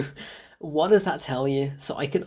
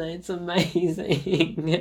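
ordinary delivery

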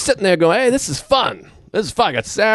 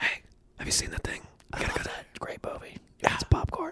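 very quiet, hushed, breathy whisper; 12 semitones higher, 16 dB quieter than usual. Showing the other speaker how to whisper properly, whispering. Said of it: "Like this. whisper".

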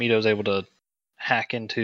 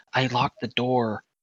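hushed, whispered delivery. Playing a character answering a man who bangs on the locked door, whispered. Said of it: "Mito kind of whispers".

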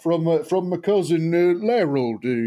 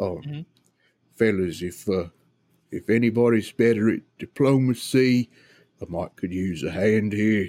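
low, muttered aside; 7 semitones lower than usual. A player's character asks companions inside for help so the guard can't hear, muttering under breath. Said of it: "I want to kind of mutter under my breath".

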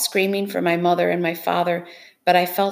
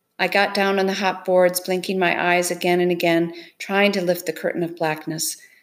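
plain

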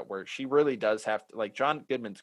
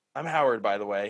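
flat, deadpan delivery, louder; 5 dB louder than usual. Retelling how Howard turns to the camera to introduce himself, Howard's deadpan delivery. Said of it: "that deadpan".

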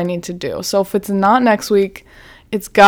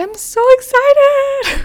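put-on very high, shrill, ear-splitting, gushing excitement. Retelling how they sound every podcast episode: imitating own loud excitement. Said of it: "breaking your eardrums".

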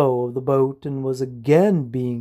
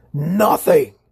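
piercing, shrill, screeched; 3 semitones higher than usual. Narrator reading the shadow's one-word answer to a question, screeching. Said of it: "the shadow screeched".

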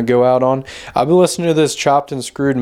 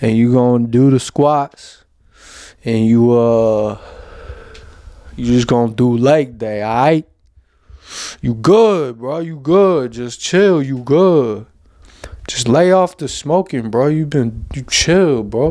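fake, put-on gym-bro street-talk accent. Speaker showing how his own inner voice talks to itself, put-on bro accent. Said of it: "that's how my internal brain talks to itself".

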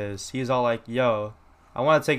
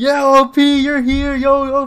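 shrill, very high, very loud screaming; 14 semitones higher, 11 dB louder than usual. Recounting someone arriving at an LAX tunnel, retelling screaming. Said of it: "I started screaming".

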